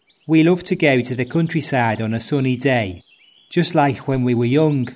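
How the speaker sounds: Scouse Liverpool accent. Reading one set sentence to show regional accents: Scouse accent.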